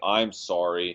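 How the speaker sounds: put-on, insincere, sarcastic tone. Speaker acts out a kid apologizing after mom insists: mock-sarcastic apology. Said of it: "all sarcastic like".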